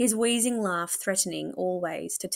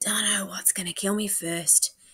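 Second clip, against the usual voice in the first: half-heard muttering under the breath; 4 dB quieter than usual. A patient answers the narrator about Matron: muttering. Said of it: "he mutters".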